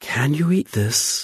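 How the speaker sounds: gentle and shy. A woman offers bread to a hungry man, asking in a soft, timid voice. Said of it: "She asked in her soft and timid voice".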